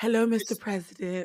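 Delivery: sultry and suggestive delivery. Imitating how she talks around men: sultry Julia Fox impression. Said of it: "That was my impression".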